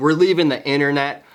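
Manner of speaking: usual speaking voice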